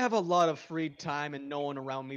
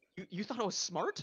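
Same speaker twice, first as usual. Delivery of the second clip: high cat voice, confused yet flattered, baffled; 6 semitones higher, 5 dB quieter than usual. Voicing a cat reacting to a compliment, imitating a confused, impressed cat. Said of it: "impressed that you thought they were smart".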